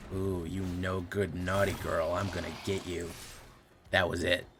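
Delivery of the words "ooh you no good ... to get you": put-on whispery robot voice, quieter. Imitating the robot lady GLaDOS taunting a player: whispering GLaDOS voice. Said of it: "This robot lady whispering to me and going".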